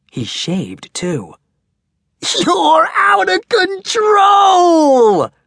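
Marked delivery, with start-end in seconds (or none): 2.4-5.3 delighted, joyful yell, very high, very slow, drawn out. Max, a seventh grader, shouting joyfully. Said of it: "shouted Max joyfully".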